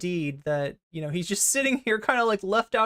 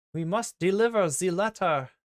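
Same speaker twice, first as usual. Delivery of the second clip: textbook German accent. Showing the classic portrayal of a German accent, stereotypical German accent. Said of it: "the classical like uh portrayal of of German accent is like".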